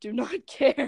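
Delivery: voice cracks mid-word on "care". Speaking to a kid and giving advice, voice cracking. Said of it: "that was a voice crack".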